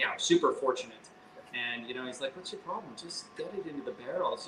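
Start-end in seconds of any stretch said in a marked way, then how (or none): 2.4-4.5 thick put-on Scottish brogue, pitched up. Retelling how a visiting distiller urged filling the barrels: imitating Mike's thick Scottish accent. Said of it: "he said in his thick Scottish accent".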